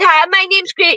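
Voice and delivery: put-on American accent. Retelling how a woman introduced herself at the end, in an american accent. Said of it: "in an accent, in an American".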